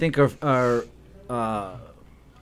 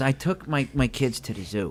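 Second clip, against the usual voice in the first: mock disappointed, let-down tone; 5 dB quieter than usual. Retelling a comedian's joke setup, imitating a disappointed tone. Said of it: "And he sounded so disappointed".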